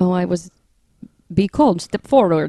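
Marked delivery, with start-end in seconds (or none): 1.3-2.5 put-on old horror-movie vampire-style voice and accent. Retelling a story, voicing the voice from a beam of light: Dracula-like accent. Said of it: "That sounds like Dracula".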